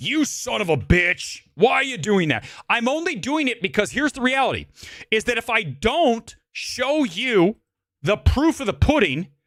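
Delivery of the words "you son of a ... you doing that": put-on angry, complaining voices. Imitating viewers who complain when this is shown: imitating angry viewers. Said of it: "you get all angry".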